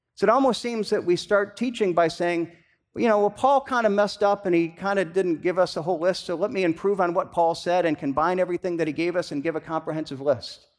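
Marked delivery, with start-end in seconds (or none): none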